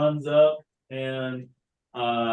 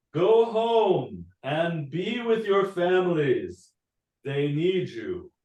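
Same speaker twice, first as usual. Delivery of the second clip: grand swooping herald voice, "home" drawn out; 3 semitones higher than usual. Voicing the voice from an unfurled scroll in a throne room: booming voice. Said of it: "a booming voice fills the room".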